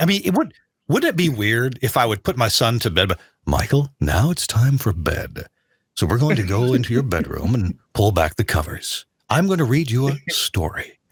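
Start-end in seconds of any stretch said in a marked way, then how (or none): 3.1-10.9 deep, put-on on-air radio announcer voice. On the radio, demonstrating putting his son to bed in a put-on radio voice. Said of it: "we all put on a little bit".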